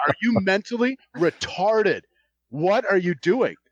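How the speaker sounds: angry outburst. Retelling confronting a driver on the firing line: imitating own angry outburst. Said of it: "I lost it".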